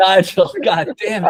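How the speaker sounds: high, loud, mock exasperated outburst.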